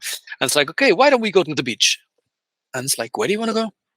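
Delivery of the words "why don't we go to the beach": put-on English spoken with an Italian accent. Recounting asking Aldo D'Ottavio what he wanted to do, imitating his Italian accent. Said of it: "he was from Italy".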